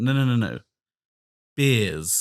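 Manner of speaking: slow, put-on northern English accent, drawn-out beers. Retelling a mate from up north mishearing a question: imitating a northern accent. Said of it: "Because of his accents".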